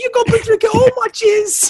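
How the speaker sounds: put-on British accent. Repeating a joking line to the others in a put-on british accent. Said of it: "I didn't say it with a British accent".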